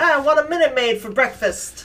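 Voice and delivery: put-on quick, high, rattled-off New Jersey accent. Imagining the actor saying a sponsor line, Ralph's New Jersey accent. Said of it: "And his New Jersey accent".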